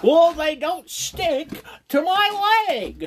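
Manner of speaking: very high, loud, stretched-out voice. Picturing a man in anti-chafing boxers at a sponsor segment: Jim Carrey voice. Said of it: "I don't know why I turned into Jim Carrey".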